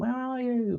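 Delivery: high-pitched, loud calling out. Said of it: "before Missus B B starts shouting up".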